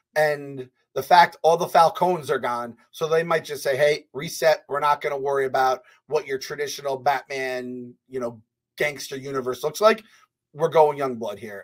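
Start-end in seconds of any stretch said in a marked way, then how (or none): none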